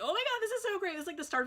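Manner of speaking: put-on high, rushed, over-the-moon excited gushing. Retelling meeting a line friend, imitating own excited freak-out. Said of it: "freaking out".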